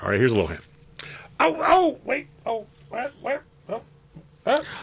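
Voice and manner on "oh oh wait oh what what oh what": very high, slow, dog-like sounds. Giving a guessing-game hint by making a sound: sounding like a dog. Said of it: "you sounded kind of like a dog".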